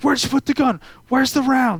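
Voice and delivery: high, screaming, in-your-face aggressive yelling. Retelling how a guy would get in his face, imitating someone screaming. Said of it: "he'd like be in my face screaming at me".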